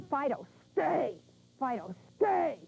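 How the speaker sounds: firm, growling voice. Showing how to give a dog the stay command, in a growling voice. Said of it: "You have to use a growling voice".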